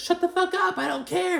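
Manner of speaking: play-acted angry yell, very high and rough. The speaker retells Kyle's reply to Dorit about Erica, retelling Kyle's angry yell. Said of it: "she's mad. She, like, yells it".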